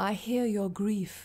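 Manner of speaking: quiet, soft murmur. The gentleman of chaos dries a crying child's tears; murmured. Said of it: "the gentleman of chaos murmured".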